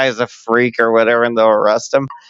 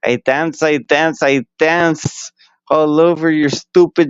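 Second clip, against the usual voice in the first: put-on Mexican accent, higher pitched; 4 semitones higher than usual. Pitching a new banana character's line: Mexican accent. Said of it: "he'll have more of a Mexican accent".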